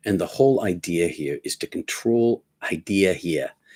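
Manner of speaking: Boston accent coming out, slipping through. Explaining a prayer practice, Boston accent coming out. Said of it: "Is my Boston accent coming out?".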